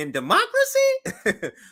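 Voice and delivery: voice goes way up, very high, slow squeak on democracy. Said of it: "our voice go up in".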